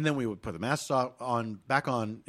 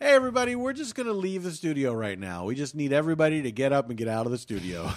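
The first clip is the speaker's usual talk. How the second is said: mock voice, slightly raised and animated; 3 semitones higher than usual. Retelling how a man addressed the hair and makeup team, in a slightly raised voice. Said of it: "he raises his voice a little bit and says".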